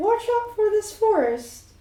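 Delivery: birdlike owl voice, pitched very high. Voicing a character who can speak in his owl form: owl voice. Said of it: "he has an owl voice".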